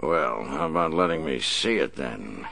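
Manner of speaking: playful, teasing fake snarl. Narrating a man speaking to the blonde, mock snarl. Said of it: "he mock-snarled".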